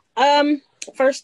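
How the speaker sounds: high-pitched, loud delivery, close to yelling.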